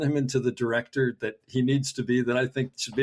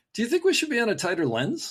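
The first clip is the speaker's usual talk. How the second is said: rising tune on the final word lens; 10 semitones higher than usual. Retelling how he phrases instructions as questions: imitating a voice rising at the end. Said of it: "his voice goes up at the end".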